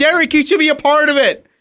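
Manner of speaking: high-pitched screaming and yelling.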